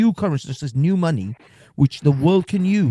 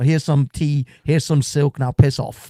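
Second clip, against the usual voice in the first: ordinary talk, nothing marked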